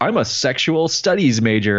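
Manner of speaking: normal talking voice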